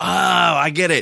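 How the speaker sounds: high, slow, drawn-out dawning realization. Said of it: "it takes me where I have to go".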